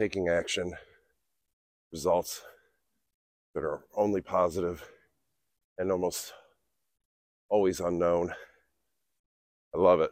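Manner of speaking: winded, breathing hard. Speaker talks while walking up a bridge, out of breath. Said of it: "I'm out of breath because I smoke and I'm walking up a bridge".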